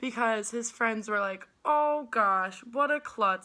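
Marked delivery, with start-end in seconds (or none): 1.6-3.5 sarcastic, drawn-out tone. Recounting what a guy's friends said when he dropped his phone, imitating sarcastic friends. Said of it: "Like in a sarcastic voice".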